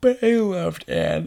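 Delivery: talking through a yawn. Chatting about a story's storylines with a friend, talking through a yawn. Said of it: "sorry, I talked through a yawn".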